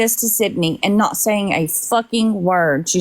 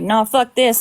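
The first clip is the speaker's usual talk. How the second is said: normal talking voice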